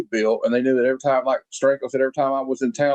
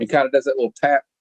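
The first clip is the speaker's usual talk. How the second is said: usual speaking voice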